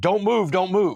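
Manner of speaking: full-volume, high-pitched police screaming. Retelling a cop standing over him with a rifle: imitating a cop screaming. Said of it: "he's screaming at the top of his lungs".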